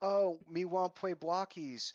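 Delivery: put-on lisp, fluffy creature. Describing how fluffies talk, the speaker imitates one in a lisping fluffy voice. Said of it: "their lisp just disappears when they swear".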